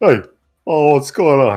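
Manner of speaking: cartoonish henchman voice. Playing a character who hears a voice in his head, answering in Kronk voice. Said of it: "because I'm in my head, I sound like Kronk".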